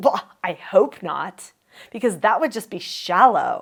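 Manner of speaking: put-on condescending, snippy tone with attitude. Showing on purpose how a disagreement can sound: put-on condescending attitude. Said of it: "that's me attacking you with an attitude".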